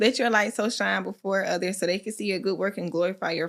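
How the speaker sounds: ordinary talk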